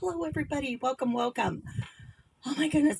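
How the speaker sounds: out of breath, huffing. Speaker welcoming everyone after rushing to fix a microphone: out of breath. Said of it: "I'm huffing and puffing here".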